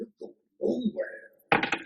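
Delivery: high, slow, raspy put-on impression voice. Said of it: "great Macho Man impression".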